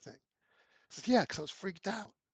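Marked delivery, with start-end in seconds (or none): 1.1-2.0 put-on whisper, higher. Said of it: "He's all whispering".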